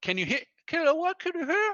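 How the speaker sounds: very high-pitched, husky, straining voice. Retelling a fight, imitating the man he punched, high-pitched husky voice. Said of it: "in his high-pitched, uh, husky voice".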